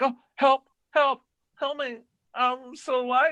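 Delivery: very high, pleading, begging cry. Retelling a trapped corpse's recorded voice: imitating a recorded plea for help. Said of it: "a recorded voice, like".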